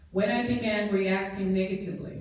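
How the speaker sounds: plain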